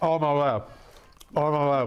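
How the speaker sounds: speaking while chewing, mouth full of food. Taking a first bite of the hot food, talking with mouth full. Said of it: "Sorry for speaking with my mouth full".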